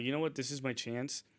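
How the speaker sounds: ordinary talk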